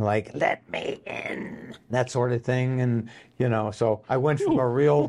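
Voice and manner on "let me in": hushed, breathy, whispered demon voice. An actor shows the voice he was cast for, in a demon voice. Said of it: "I got cast on my demon voice".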